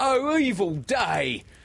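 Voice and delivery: shrill, very high, cried-out exclamation. Narrator reading a pirate's reply to the news, crying out. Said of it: "cried Starkey".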